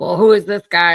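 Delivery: put-on angry voice. Retelling a story, the speaker acts out a man's reaction, imitating a man getting mad. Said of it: "He like kind of starts getting mad".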